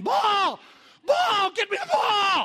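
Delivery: very loud, shrill, high, booming, drawn-out scream. Retelling a game in the water where he was left wide open; reenacting his own screaming. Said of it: "and I'm screaming".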